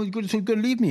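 fast, very high-pitched, emotional rush of words. Retelling a spouse's complaint: imitating fast talking. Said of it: "Bless talks a little bit fast".

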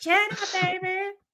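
put-on slacker drawl. Imitating how Pauly Shore says chowder: Pauly Shore voice. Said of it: "Pauly Shore, the way he says".

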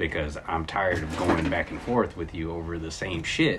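plain

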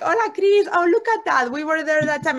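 high, loud, cheerful excited voice.

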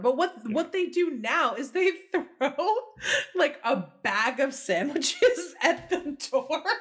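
words broken up by hard laughter. Telling a story about goblins throwing sandwiches at the door, laughing hard while talking. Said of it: "I'm laughing so hard".

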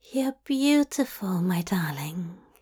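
hushed, husky, whispered. Narrator reading one character's line to another, as a husky whisper. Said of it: "Zira whispered huskily".

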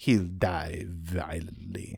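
put-on Eastern European accent. Retelling a scene where a character mimics Madame Vorna's Eastern European accent. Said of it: "Kathy impersonates Madame Vorna's, uh, Eastern European accent".

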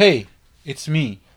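bringing it one hundred percent. Showing another speaker how to greet someone: bringing it one hundred percent. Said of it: "No, you gotta be like".

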